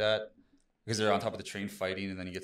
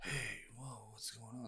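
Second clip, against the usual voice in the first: very quiet, laid-back chill dude voice, easygoing surprise; 2 semitones higher, 13 dB quieter than usual. Imitating Keanu Reeves in the Bill and Ted trailer: Keanu Reeves impression. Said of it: "that kind of Keanu vibe".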